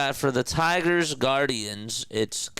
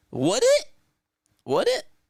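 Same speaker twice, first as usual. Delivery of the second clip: voice breaking into a very high crack; 4 dB louder than usual. Baseball announcer calling a pitch: voice cracking. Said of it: "My voice just cracked there".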